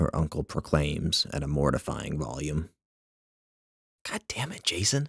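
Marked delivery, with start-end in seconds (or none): 4.0-5.1 spooked, startled whisper, much higher. Startled by her uncle calling out to her late, she answers in a spooked whisper. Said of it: "she whispers, spooked".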